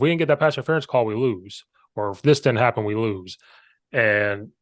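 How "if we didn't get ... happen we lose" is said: ordinary talk, nothing marked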